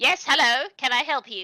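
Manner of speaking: put-on high, loud little old goblin woman's voice. Game master voicing an old goblin lady greeting the players, little old goblin lady voice. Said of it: "Like she's this is a little old lady".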